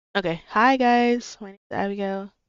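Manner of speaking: lacking enthusiasm. Told to try her introduction again after not being heard, unenthusiastic. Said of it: "she's not really enthusiastic".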